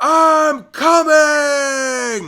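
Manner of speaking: shrill, very high scream at full volume. Retelling a man standing on a boat's bow shouting out, retelling a scream. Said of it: "he screams out".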